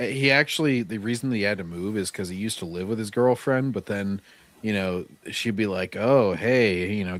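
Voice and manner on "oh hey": mock flirtatious voice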